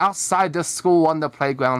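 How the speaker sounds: ordinary delivery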